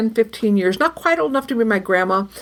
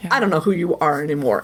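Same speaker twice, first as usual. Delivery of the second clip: pointed, accusing, condemning tone; 6 semitones lower than usual. Retelling a hurtful remark others made: imitating an accusatory tone. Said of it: "in this accusatory tone".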